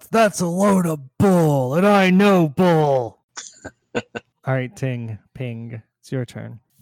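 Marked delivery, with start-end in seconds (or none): 0.1-3.2 hot-tempered, loud, high-pitched angry shout. Running a game for the group, the narrator voices Simon's line, shouting. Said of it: "Simon shouts".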